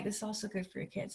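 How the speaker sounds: quiet muttering under the breath. Retelling what a mentor told the speaker in an RV: imitating Marjorie under her breath. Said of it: "Kinda like that, kinda like".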